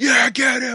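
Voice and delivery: put-on top-of-voice yelling. Retelling how a man yelled at a TV fight, retelling screaming at the TV. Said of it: "just screaming at the screen".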